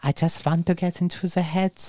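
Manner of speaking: put-on sweet little Germanic-accented voice. Fondly recalling the man who helped psychoanalyze the soldiers, do Martin Bergman's cute little Germanic voice. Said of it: "in his little cute little Germanic voice".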